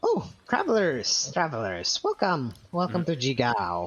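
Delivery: put-on elder goblin voice. Voicing the Elder Goblin greeting travelers: Elder Goblin voice. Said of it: "the goblin just speaks up and he says".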